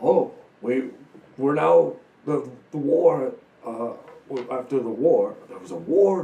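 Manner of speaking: loud, slow stammering, stumbling through. Voicing Gundren answering about the Alliance: voicing Gundren, stammering. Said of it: "And Gundren's like".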